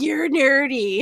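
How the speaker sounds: put-on dumb-sounding, high, voice-cracking twelve-year-old kid voice. Repeating an insult from someone who dislikes what he does, in a voice-cracking twelve-year-old voice. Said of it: "voice cracking kind of twelve-year-old voice".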